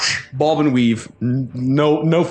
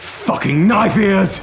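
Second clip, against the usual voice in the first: high-pitched, angry yelling; 6 semitones higher than usual. Voicing someone shouting down the alley at an elf: angry shout. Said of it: "you can hear shouting down the alley".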